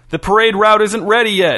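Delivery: high, loud shout. Narrator reading the film star's line as he runs beside a tractor: shouted. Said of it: "shouted Don Gershwin".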